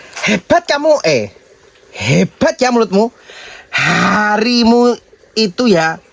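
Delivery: high, slow, angry scolding tone in Jakarta accent.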